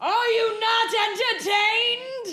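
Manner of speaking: very high pitch, very slow, drawn-out delivery. Retelling a movie character's stage imitation: Russell Crowe impression. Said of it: "I can do an imitation of Ru-, Russell Crowe?".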